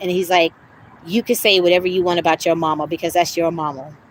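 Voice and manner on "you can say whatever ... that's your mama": mock nice, calm, gentle, sweet, low voice. Retelling what a man said to the speaker on the phone, imitating a nice calm sweet voice. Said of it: "In a nice, calm, sweet voice".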